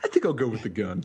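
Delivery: patronizing, talking-down, condescending tone. Reading a villain's line aloud, more condescending. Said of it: "you gotta say it more condescending".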